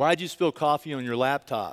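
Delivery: condescending, talking-down tone. Retelling what the computer store worker said: imitating a demeaning it voice. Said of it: "in this sort of demeaning I T kind of voice".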